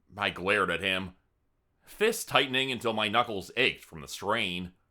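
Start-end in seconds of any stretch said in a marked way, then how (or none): none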